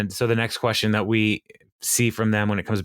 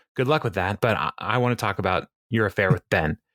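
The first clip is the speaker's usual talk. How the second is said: ordinary talk, nothing marked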